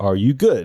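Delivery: ordinary delivery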